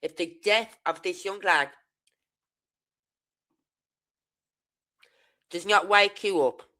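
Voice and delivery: flipping mad and furious, patience gone. Addressing listeners about a young lad's death, the speaker is furious. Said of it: "because I am flipping mad".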